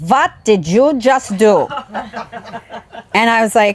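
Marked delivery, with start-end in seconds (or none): 0.0-1.7 sharp, put-on German accent. Quoting a grandmother who lived with the family: German accent. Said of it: "German accent".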